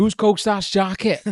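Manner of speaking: put-on very loud, slow, drawn-out Welsh accent. Retelling a holiday, the speaker repeats two Welsh guys' accent tip in a Welsh accent. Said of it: "the way to do a Welsh accent is you just say".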